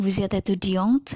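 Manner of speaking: rising questioning pitch at end of étudiante. French lesson on asking questions by intonation alone: rising pitch on étudiante. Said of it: "jadi nadanya naik".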